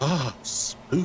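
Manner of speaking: put-on soft, booming voice. Imitating a voice someone did for them: imitating a soft, booming voice. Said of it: "the soft, booming voice of".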